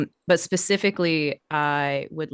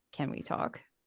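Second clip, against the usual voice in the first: very low, hushed, barely-there whisper; 12 dB quieter than usual. Tugging another character's shoulder to talk privately: very low whisper. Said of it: "very low whisper".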